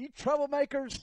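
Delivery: play-acted, very high, loud shouted call-out. Retelling greeting two people on pit road: retelling own yell. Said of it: "And I yelled it out".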